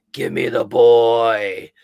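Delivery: put-on loud, very slow, evil, menacing, with boy stretched out. Retelling a movie scene with Chucky stabbing through a door: evil Chucky voice. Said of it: "his voice changed even a little bit more because he was like".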